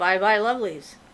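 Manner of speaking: ordinary talk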